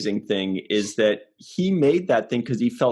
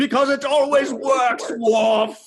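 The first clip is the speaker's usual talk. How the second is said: very high, slow, badly done put-on voice; 3 dB louder than usual. Quoting Picard's line to Worf: Picard impression. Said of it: "And he goes".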